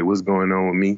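ordinary talk, nothing marked

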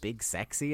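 usual speaking voice

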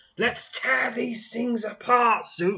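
very high, loud snarling yell. Reading a game story, a character raises his sword and leaps forward, snarling. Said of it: "he snarls".

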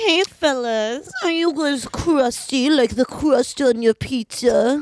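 put-on 1930s sexy, sultry voice. Improv scene, ordering pizza and trying to chat with the guys at Sbarro: 1930s sexy voice. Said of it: "I was trying to do like a 1930s sexy voice".

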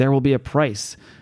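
put-on whispering. Retelling a scene where a character wakes up and speaks: imitating a whisper. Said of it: "she whispers".

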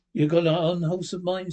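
ordinary delivery

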